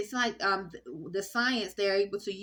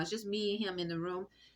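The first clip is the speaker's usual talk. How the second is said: ordinary delivery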